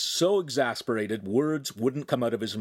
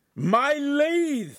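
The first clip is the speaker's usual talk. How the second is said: very high shriek of alarm; 4 dB louder than usual. The master watches Ugolino tumble down the stairs with his lathe, screaming. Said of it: "the master screamed".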